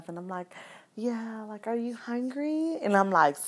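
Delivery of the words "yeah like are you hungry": hushed, softest voice, pitched up. Retelling offering breakfast to a partner, imitating own softest voice. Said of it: "softest voice ever".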